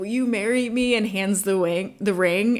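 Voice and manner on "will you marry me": put-on squeaked-out voice, higher in pitch. Speaker retells Daryl's proposal: imitating Daryl squeaking it out. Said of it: "he kind of squeaks out".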